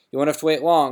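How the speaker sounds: said with a grin. Narrating, Hagrid answers Harry, said with a grin. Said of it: "said Hagrid with a grin".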